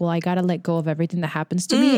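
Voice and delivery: ordinary talk, nothing marked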